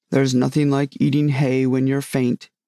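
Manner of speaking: usual speaking voice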